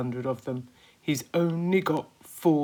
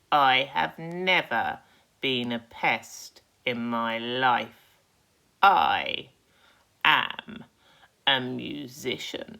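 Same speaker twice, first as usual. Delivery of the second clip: deep, slow, drawn-out, contemptuous and scornful voice; 4 semitones lower than usual. Narrator reading the green grasshopper answering the centipede, deep, slow, scornful voice. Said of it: "speaking in a deep, slow, scornful voice".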